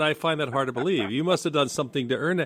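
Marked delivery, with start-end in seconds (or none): none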